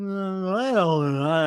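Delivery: put-on slouching, nervous, drained, slow, defeated voice. Mocking an interviewee as defeated and nervous: imitating Bob's defeated, low-energy voice. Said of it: "slouching, nervous, you know, just like, uh, low energy".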